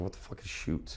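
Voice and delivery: whispered, baffled, confused aside. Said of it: "And I was like".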